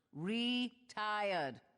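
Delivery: syllables stretched slowly. Insisting to the others, who won't believe it, that she's retired: said slowly. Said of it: "I could say it slowly".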